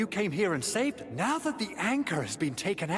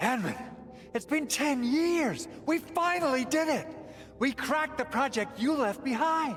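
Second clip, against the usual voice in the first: loud stage whisper on every word; 7 semitones higher than usual. A character welcomes someone back after ten years away, whisper-yelling. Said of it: "Why is he whispering every line?".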